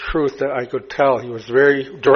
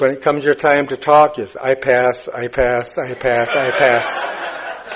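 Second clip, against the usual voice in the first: ordinary talk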